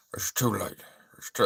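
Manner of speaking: gruff, deep, dropped-low delivery. Retrying the line more gruffly: gruff Sean Connery impression. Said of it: "more gruff".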